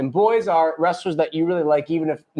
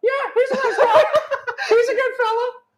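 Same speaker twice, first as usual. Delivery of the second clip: mimicking voice, much higher pitched. Host mimicking a guest's answer about whether someone was nice: mimicking voice going high. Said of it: "your voice went high".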